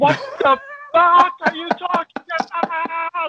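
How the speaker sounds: high, slow scream. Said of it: "I'm screaming at my phone".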